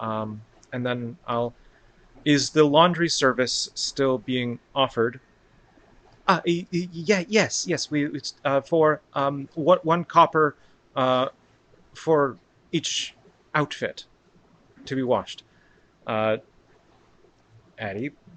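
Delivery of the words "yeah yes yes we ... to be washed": halting, stammering, stuttering delivery. Voicing a woman who stutters, answering Addie's question, stuttering. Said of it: "apparently, she stutters".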